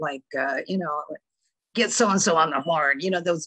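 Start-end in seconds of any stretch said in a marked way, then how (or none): 1.7-3.0 imitated gravelly newsman voice. Retelling what old newspaper editors used to bark: imitating a gravelly newsman voice. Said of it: "those just gravelly voices".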